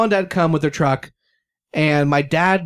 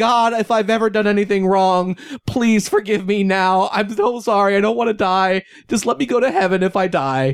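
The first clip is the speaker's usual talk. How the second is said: play-acted, high, tearful, pleading voice through sobs; 5 semitones higher than usual. Retelling praying while stressed out in the car: retelling own sobbing prayer. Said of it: "I'm just sobbing, and I'm praying".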